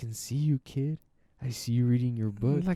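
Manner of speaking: eerie, high-pitched spooky storyteller voice. Telling a listener about a voice heard while doing homework, imitating a high-pitched voice. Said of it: "it was like a high pitch".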